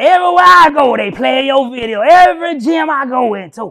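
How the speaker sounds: very loud, slow, scratchy, drawn-out delivery. Retelling a phone call from a fitness trainer friend: imitating a friend's scratchy voice. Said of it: "He got this little scratchy voice".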